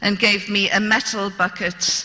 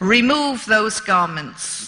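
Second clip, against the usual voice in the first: mock growling voice in broken English. Retelling a big bearded man ordering the speaker, imitating a growl in broken english. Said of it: "he growled at me".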